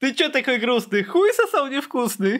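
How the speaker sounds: high, mocking, sing-song taunting tone.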